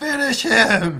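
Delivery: loud, high-pitched, acted yell. Voicing a wrestler standing up at ringside: in-character yell. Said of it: "he yells".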